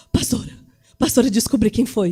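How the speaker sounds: put-on horrified, shocked voice. Retelling the cook's report of who took the bread: imitating a horrified cook. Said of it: "veio a cozinheira, horrorizada".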